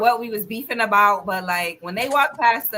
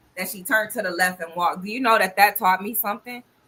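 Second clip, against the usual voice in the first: ordinary talk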